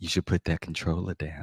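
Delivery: seductive murmur, very low, soft and hushed. Telling listeners how to get their man's attention, in a seductive voice. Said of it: "You come up with a little seductive voice".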